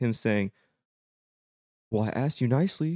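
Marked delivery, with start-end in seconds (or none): 1.9-3.0 put-on British accent, much higher. Speaker retells what an accused man says on a recording, in a British voice. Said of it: "but in like in a British voice".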